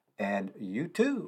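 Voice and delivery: slow, drawn-out, wide-swinging commercial announcer voice.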